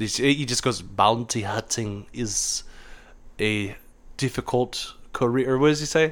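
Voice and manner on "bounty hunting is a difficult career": put-on very slow, whispered, hushed old German man voice. Quoting a character's only line of dialogue, in a German old man voice. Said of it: "That's my go to German old man voice".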